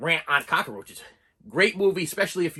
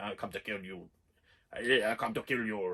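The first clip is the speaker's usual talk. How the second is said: fake German accent, very quiet, hushed and slow; 7 semitones lower, 10 dB quieter than usual. Describing the movie's German-sounding killer, trying out a fake German accent. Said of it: "Is that German?".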